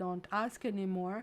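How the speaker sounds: ordinary delivery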